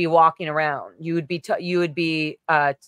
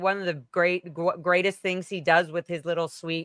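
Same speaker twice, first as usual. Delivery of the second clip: ordinary talk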